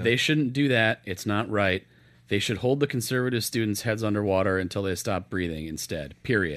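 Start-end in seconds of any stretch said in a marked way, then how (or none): none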